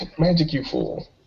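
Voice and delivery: soft whisper under the breath. In a tabletop game, a player speaks an in-character line, whispering. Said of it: "I'll whisper to whisper".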